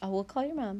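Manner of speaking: ordinary delivery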